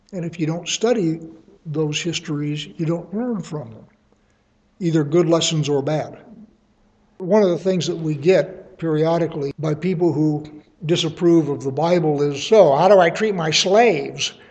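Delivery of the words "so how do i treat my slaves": loud, sneering, snarky, mocking tone. Voicing people who disapprove of the Bible, in a mocking snarky tone. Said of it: "in a snarky tone".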